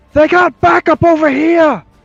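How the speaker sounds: shouted, in-character yell. Playing a character who warns allies about enemy backup: in-character yell.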